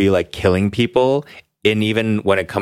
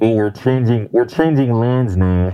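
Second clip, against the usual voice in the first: put-on subway announcer voice, much slower. Describing new york subway speakers, the speaker imitates one: new york subway announcement impression. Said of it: "and they sound like this".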